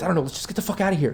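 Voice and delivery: hushed, whispered male voice. Voicing a hidden man upstairs who wants to flee: whispering male voice. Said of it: "the other voice, the male voice".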